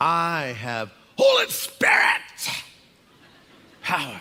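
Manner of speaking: exuberant, swooping delivery. Mimicking how people claim holy spirit power, mock-exuberant claim. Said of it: "they'll say it with a lot of exuberance".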